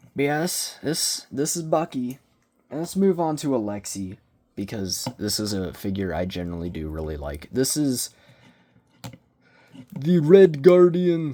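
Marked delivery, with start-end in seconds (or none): 7.5-11.3 very loud, high, horrid fake Russian accent. Introducing a collectible figure, in a horrid put-on Russian accent. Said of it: "That was my horrid attempt at a Russian accent".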